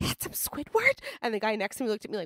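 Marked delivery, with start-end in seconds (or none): 0.0-1.0 very loud, forceful whisper meant to carry. Retelling reacting on a train to a character: imitating a loud whisper. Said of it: "I just very loudly whispered".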